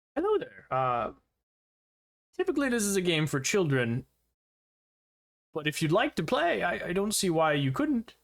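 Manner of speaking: cartoonish voice with the endings carried out. A character offers to let the player join a children's game, in a funny Disney-esque voice. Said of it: "he's got his funny kind of Disney-esque voice".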